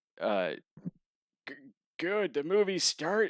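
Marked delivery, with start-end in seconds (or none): 1.5-3.3 high, clumsily put-on elderly woman's voice. Retelling what an old lady at the movies said, in a Lloyd voice. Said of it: "that's my Lloyd voice".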